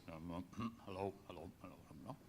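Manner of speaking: very low, hushed, rehearsed-sounding, deep put-on voice. Retelling Billy practicing a phone greeting while it rings: much deeper put-on voice. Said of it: "He's practicing a much deeper voice".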